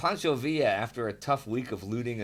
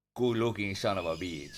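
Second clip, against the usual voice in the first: exaggerated Spanish accent, laid on thick; 4 semitones lower than usual. Reading aloud how a pitcher admired himself in the mirror: Luis Tiant's exaggerated Spanish accent. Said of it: "in his exaggerated Spanish accent".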